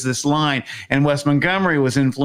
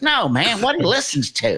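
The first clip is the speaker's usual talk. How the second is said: put-on Southern accent, pitched higher; 8 semitones higher than usual. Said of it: "Curtis has this Southern accent".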